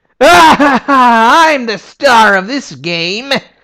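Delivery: shrill, loud, high, drawn-out slow whine. Describing a game's characters, doing a line in a whiny Titus voice. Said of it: "comes across often as quite whiny".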